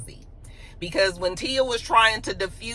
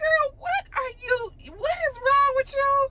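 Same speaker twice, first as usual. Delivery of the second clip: very high, slow, drawn-out incredulous disbelief. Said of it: "everybody was like".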